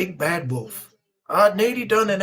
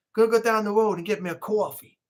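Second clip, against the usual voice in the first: put-on New Yorker accent. Speaker showing how New Yorkers say coffee, in a New York accent. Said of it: "New Yorkers have always got a weird".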